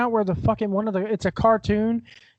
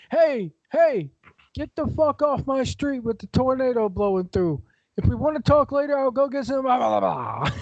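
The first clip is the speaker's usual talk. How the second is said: put-on New York Italian accent, street-talk manner; 2 semitones higher than usual. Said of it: "New York style Italian storm chasers".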